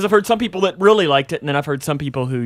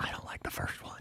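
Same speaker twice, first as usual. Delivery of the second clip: very soft, secretive whisper. In a conversation with two others, admitting something in a whisper. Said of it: "I have to whisper when I say this".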